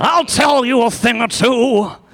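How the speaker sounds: put-on very high-pitched, cranky, grumpy old-man voice. Continuing the bit after another speaker names the voice: Old Man Withers voice. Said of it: "Old Man Withers is how it's coming up".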